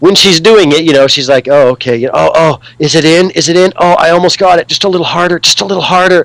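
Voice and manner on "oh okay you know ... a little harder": moans of pleasure throughout, totally orgasmic. Retelling a movie massage scene, imitating a totally orgasmic voice. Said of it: "she's saying it in a totally orgasmic way".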